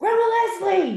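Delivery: put-on high, sassy little-girl voice, yelling. Speaker acts out a little girl yelling at the speaker's mom, imitating a child yelling. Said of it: "she's just yelling at my mom".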